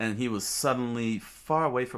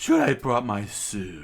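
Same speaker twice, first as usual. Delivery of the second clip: loud, swooping, snooty, stuck-up snobby voice; 6 dB louder than usual. Narrating a story, voicing a character's line in a snobby voice. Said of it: "I guess that's a snobby voice".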